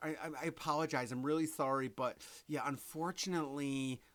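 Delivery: hesitant, slow, stumbling, overly apologetic hedging. Showing how not to talk to customers: overly apologetic. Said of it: "don't be like".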